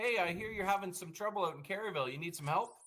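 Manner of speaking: mocking, taunting, teasing with fake concern. Retelling a phone call from a sergeant: imitating a mocking sergeant. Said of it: "Sergeant Ignatiuk in Cardiff mocking me".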